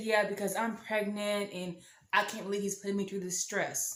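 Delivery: ordinary delivery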